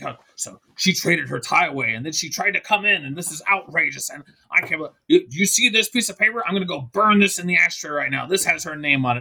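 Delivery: put-on, dead-set, outraged, indignant rant. Retelling how a friend kept ranting, imitating an outraged rant. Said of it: "she's dead intent on this".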